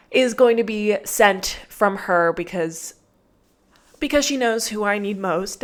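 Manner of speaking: choked up, emotion catching in the throat. Talking about hoping the right puppy is sent: getting emotional. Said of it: "I'm gonna get emotional now".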